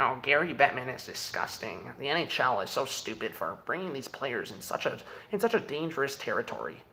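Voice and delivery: soft, snide, sarcastic voice. Mocking people who type complaints behind a screen, mocking online complainers. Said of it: "type behind a screen going".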